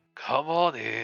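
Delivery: big booming voice. A game master voices an unseen figure behind the door; booming voice. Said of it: "a booming voice just says".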